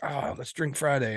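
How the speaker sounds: put-on Venezuelan-accented speech. Quoting a Venezuelan friend suggesting a Friday drink, imitated Venezuelan accent. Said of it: "I do that voice just because he's Venezuelan".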